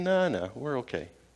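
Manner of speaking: low, slow, relaxed, easygoing, unbothered calm. Telling a joke about two guys stranded on an island, as the calm one; mock-calm. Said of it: "just calm and leaning up against a coconut tree".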